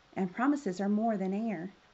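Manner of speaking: ordinary delivery, nothing marked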